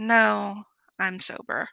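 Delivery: shamefaced, ashamed, owning-up tone. Retelling answering nurses at the hospital: imitating ashamed admission. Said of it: "hang her head in shame and say".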